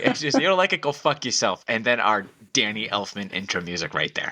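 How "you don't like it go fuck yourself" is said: put-on New York tough guy accent, pitched up. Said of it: "You say it a lot better".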